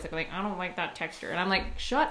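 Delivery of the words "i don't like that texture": soft, derisive, mocking put-on voice. Recalling being annoyed by people who dislike textures, the speaker mimics them mockingly. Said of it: "I would say it in that voice".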